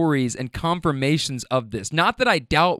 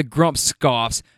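plain

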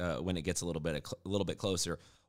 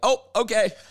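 high-pitched, loud impressed exclamation. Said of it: "And I was like".

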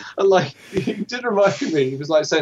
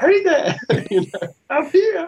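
very high, pitched-up voice; 9 semitones higher than usual. Retelling a scene where Yoda speaks to Rey: imitating Yoda. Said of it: "there was Yoda just going".

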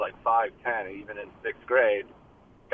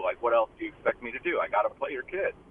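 plain

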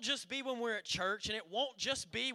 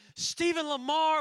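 acted, fed-up, very loud, high scolding yell; 6 semitones higher, 8 dB louder than usual. Retelling a mother who has had it with the kids: imitating Courtney scolding. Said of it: "she's getting 'em".

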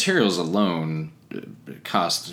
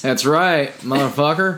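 bad, stupid, put-on Southern accent, pitched up; 8 semitones higher, 4 dB louder than usual. Replying to a joke about being American: stupid Southern accent. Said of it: "that was my stupid Southern accent".

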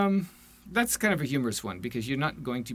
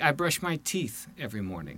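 usual speaking voice

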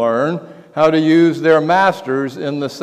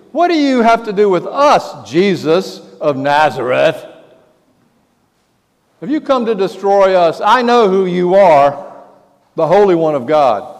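acted out, imitated man yelling, outcry kept contained; 4 semitones higher than usual. Retelling how a man in the synagogue stood up yelling at Jesus: imitating a man yelling. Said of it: "starts yelling at Jesus".

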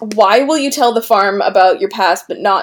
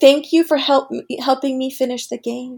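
put-on creepy voice, higher and quieter; 4 semitones higher, 5 dB quieter than usual. Retelling a character's line as she holds his wrist: imitating a creepy line.

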